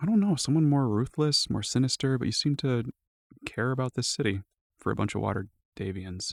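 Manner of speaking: quiet, soft delivery. A role-play character answering a question about what was expected, quietly. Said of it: "he says quietly".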